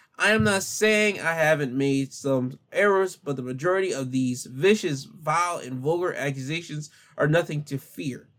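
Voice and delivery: ordinary delivery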